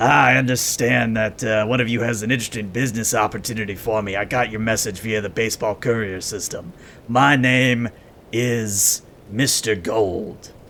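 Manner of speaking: raspy, bright and upbeat ghoul voice. Narrator voices a ghoul introducing himself to the group: Mister Gold's raspy upbeat ghoul voice. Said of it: "standard ghoul raspy".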